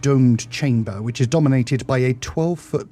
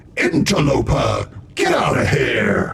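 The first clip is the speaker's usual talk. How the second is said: unseen, disembodied voice echoing around the room. Narrator voices an unseen voice ordering the intruders out, echoing voice. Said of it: "You hear a voice saying".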